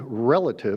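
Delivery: stress placed on the word "relative". Speaker explaining china's current dilemma, stressing the word relative. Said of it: "I emphasize the word relative there".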